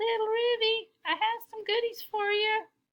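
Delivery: tiny, very high squeaky voice. The cat at the door answers a voice on the intercom: squeaky voice. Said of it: "squeaked the cat".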